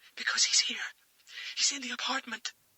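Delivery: very high, terrified, breathless, trembling whisper. Reading a thriller aloud, the caller explains she is hiding: terrified, shallow breaths. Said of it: "she said between terrified, shallow breaths".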